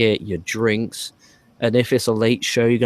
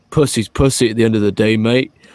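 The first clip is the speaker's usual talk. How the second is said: loud, proper, deep big-guy voice; 5 dB louder than usual. Retelling what Ray said to his friends after winking, Ray's proper deep voice. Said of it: "Like in that proper deep voice".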